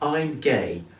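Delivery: ordinary talk, nothing marked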